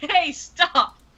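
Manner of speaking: mild, high and light, called out. Voicing a character calling out to stop an attacker: shouting in character. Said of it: "And she kinda shouts".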